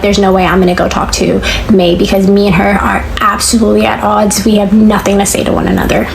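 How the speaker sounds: ordinary talk, nothing marked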